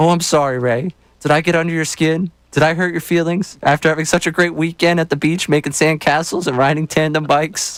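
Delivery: put-on high, teasing, taunting baby voice. Reading aloud a text aimed at Ray, in a mocking baby voice. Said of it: "Said in Ish's baby voice".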